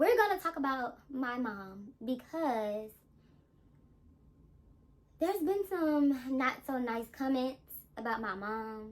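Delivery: slow, drawn-out speech.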